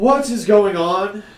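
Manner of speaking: very high, shrill, snooty, irritated and disgruntled voice. Voicing a figure calling from a far tent: disgruntled hoity-toity voice. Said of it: "a disgruntled kind of hoity-toity voice".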